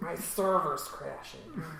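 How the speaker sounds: very loud put-on nerdy voice. Joking in conversation about digital pain, putting on a nerd voice. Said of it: "That's my nerd voice".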